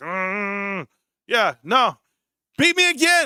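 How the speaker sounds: put-on pissed-off, slow, drawn-out, rising "mm". Retelling losing a game, imitating own pissed-off past self. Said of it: "I'm pissed".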